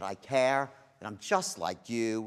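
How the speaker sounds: slow, caring, connecting tone. Showing a learner how to sound when saying you care: caring, connecting tonality. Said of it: "I said that".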